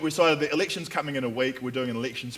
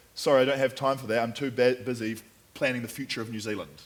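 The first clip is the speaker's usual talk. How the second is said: ordinary delivery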